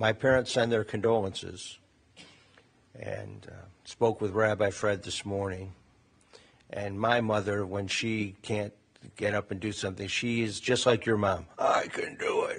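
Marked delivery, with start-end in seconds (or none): 11.6-12.6 play-acted big voice, drawn way out, very slow. Passing on condolences and recalling their mother, imitating mom's big voice. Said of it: "That big voice".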